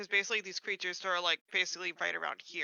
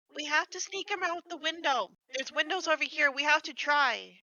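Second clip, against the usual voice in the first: calling just loud enough to carry, pitched-up, guarded; 9 semitones higher, 3 dB louder than usual. Calling in character to an ally about sneaking out a window: softly calling out. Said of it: "like softly, just loud enough ... that Forte can hear".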